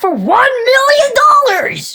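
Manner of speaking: very high, loud, hyped-up, showy shout. Describing MrBeast bringing your arch nemesis to you, doing a MrBeast impression. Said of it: "This is my Mister Beast impression".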